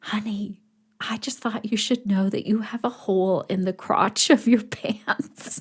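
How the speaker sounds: hushed stage whisper. Retelling what a first-timer whispered in her ear, retelling a whisper. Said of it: "she whispers in my ear".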